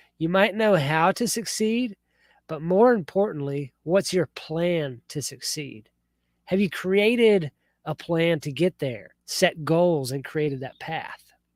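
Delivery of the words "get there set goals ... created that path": ordinary talk, nothing marked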